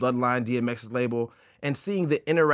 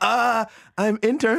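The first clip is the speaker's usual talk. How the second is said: halting voice, breaking and cracking; 10 semitones higher, 6 dB louder than usual. An intern retells answering a caller's question: imitating own voice cracking. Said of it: "my voice is now cracking".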